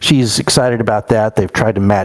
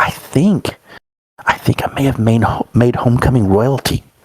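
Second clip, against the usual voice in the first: theatrical whisper. Game master voicing a character who whispers to the player, whispered. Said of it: "she whispers to you".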